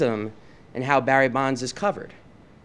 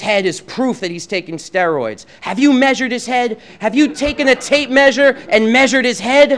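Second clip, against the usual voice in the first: put-on yelling in a man's voice; 11 semitones higher, 8 dB louder than usual. Retelling what a man kept saying to him, retelling someone's yelling. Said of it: "He's yelling this at me".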